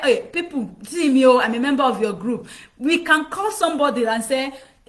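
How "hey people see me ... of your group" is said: ordinary talk, nothing marked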